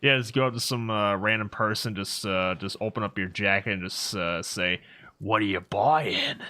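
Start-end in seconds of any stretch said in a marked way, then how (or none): 5.2-6.4 shady dealer voice, hawking patter. Suggesting a bit to try on a random person, RE4 Merchant voice. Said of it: "that probably wasn't my best um, merchant voice".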